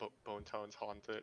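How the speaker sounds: very soft, quiet mumble under the breath. Voicing Cantor in a scene: muttering under his breath. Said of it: "Cantor's muttering under his breath".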